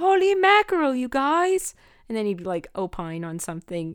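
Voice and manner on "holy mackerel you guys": very high-pitched, drawn-out yell. Describing how your favorite show character introduces himself, Dill yelling impression. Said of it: "introduce himself by just yelling".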